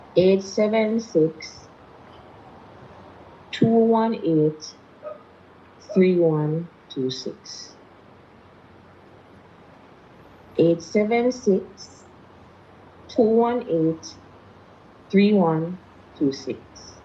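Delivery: slow, careful, deliberate, spaced-out delivery. Giving viewers a phone number after being asked to: saying it slowly. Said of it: "Say it slowly for them and say it to them twice".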